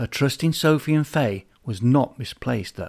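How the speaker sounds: ordinary delivery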